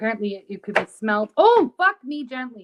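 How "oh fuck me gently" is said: loud, high, drawn-out blurted yell. Reacting to hearing that something could be smelled: yelling loudly. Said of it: "I didn't mean to yell that so loud".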